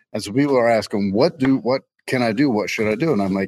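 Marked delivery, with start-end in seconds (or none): none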